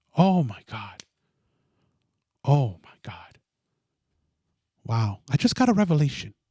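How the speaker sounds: feigned awe, thick with sarcasm. Reacting to a claim about parents working together: sarcastic mock amazement. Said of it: "I love the sarcasm".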